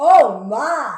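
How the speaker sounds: very loud, amazed, wonder-struck cry. Leading the audience to look up at the sky and exclaim, amazed 'oh my!' exclamation. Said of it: "Let's look up and say".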